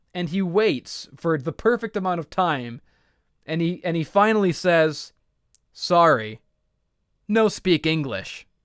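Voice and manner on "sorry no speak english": put-on Japanese-accented English. Retelling the wrestler's final line, imitating Shinsuke Nakamura's broken English. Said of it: "he leans into the microphone".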